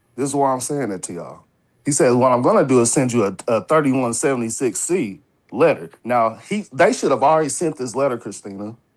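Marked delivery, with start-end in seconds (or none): none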